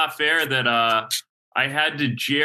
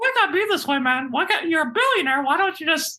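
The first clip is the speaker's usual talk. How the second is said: squeaky, high-pitched cartoon voice. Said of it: "He kind of sounds like Mickey Mouse too".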